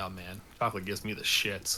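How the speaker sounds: hushed, half-whispered aside under the breath. Half-whispering in character to a companion while walking past: half-whispering to Tiberius. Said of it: "I whisper to Tiberius".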